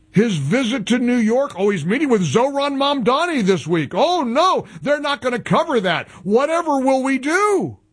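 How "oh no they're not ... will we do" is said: high, sarcastic, fake-alarmed dismay. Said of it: "I was being sarcastic".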